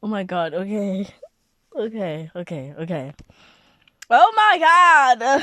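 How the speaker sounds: talking through laughter. Reacting to a post read aloud, laughing while talking. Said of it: "Sorry, I'm not laughing".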